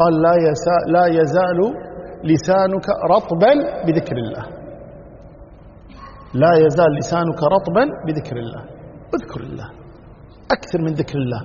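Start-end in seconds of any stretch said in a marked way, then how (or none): none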